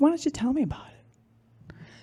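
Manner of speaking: put-on kind, supportive voice. Retelling a phone call from a father: imitating a loving, comforting voice. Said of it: "loving and kind and supportive and comforting".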